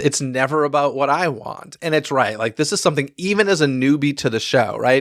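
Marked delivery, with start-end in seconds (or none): none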